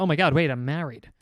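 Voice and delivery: normal talking voice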